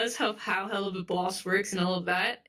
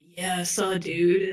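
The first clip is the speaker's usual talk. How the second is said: stoner voice with pitch bobbing up and down; 4 dB louder than usual. Describing how the high clown character talks: imitating a stoner's up-and-down voice. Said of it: "how they talk, like, up and down and up and down".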